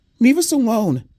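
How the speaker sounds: small, very high, begging, pleading voice. Narrator voicing Eddie as he pleads with the big man, tiny pleading voice. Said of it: "Eddie pleaded in a tiny voice".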